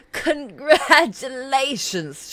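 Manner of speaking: high, loud, cackling sorceress voice. A narrator reading a woman who greets a visitor, cackling. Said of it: "she cackles".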